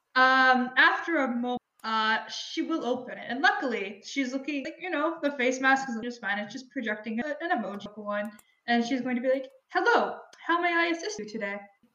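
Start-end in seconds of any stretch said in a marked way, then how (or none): 9.6-11.5 robotic android customer-service assistant voice. Voicing an android answering the door to a neighbor: robotic assistant voice. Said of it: "the voice and the face".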